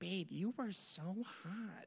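soft, hushed, high-pitched cartoon housewife character voice. Speaker retells what she said seeing his high-school pictures, in a Lois from Family Guy voice. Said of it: "she sounds a little bit more like Lois from Family Guy".

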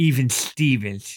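put-on child voice with a little lisp. Recalling the creepy kid from Near Dark: imitating his little lisp. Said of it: "going with his little lisp".

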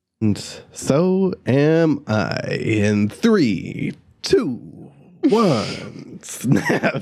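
put-on radio announcer voice. Resuming the recording, the speaker counts down in a radio voice. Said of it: "That's my radio voice".

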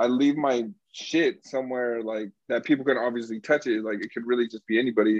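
plain

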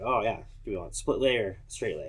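ordinary talk

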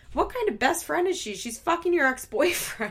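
put-on seething, furious, high-pitched outburst. Speaker retelling a man's outburst at his partner, retelling a livid outburst.

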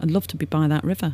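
usual speaking voice

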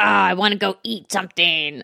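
dumb, thick-headed meathead jock voice. Quoting a shark buddy character, in a meathead voice. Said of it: "very much like a quintessential meathead".

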